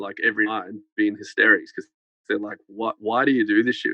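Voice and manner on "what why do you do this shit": usual speaking voice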